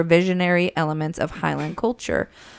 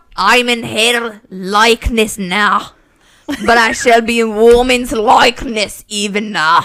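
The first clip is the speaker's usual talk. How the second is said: Scottish-Irish accent, belted very loud; 5 semitones higher, 8 dB louder than usual. Performing a line for listeners who judge accents: scottish or irish accent. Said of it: "evolution of accents".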